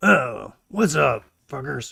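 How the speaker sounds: short, curt, gruff delivery. A woman greets visitors who have just landed on her station, with a curt greeting. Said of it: "So she greets you guys curtly".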